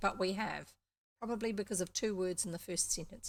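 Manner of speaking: ordinary delivery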